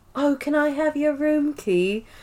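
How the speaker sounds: put-on quiet British accent. Recounting a TV scene after Dwight's line, the speaker does a Nellie impression with a British accent. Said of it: "Have you practiced that accent?".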